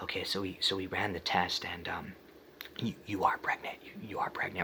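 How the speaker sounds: stumbling, breathy, hushed whisper. Retelling how staff gave pregnancy test results, imitating someone whispering. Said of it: "they, like, whispered it to us".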